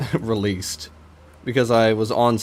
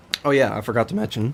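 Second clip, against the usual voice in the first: voice breaking, cracking. Suddenly remembering something to mention, speaking through a voice crack. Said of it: "Holy voice crack".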